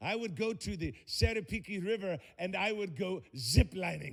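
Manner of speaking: slow, careful, non-native broken English. Retelling what the hotel front desk lady suggested, imitating her broken english. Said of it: "with broken English".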